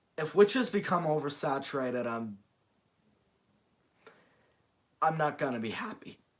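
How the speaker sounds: voice breaking and cracking mid-line. Speaker giving opinions on a list, voice cracking. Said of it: "Little bit of a voice crack there".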